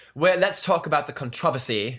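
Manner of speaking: mock put-on British accent. Imitating a skincare YouTuber's way of saying a word, in a British accent. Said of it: "a skin t- skincare YouTuber that says controversy".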